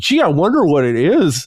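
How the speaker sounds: slow, knowingly faux-naive, mocking feigned clueless wondering. Retelling how online creators acted, imitating creators playing dumb. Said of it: "smarter than what they were presenting online, being like".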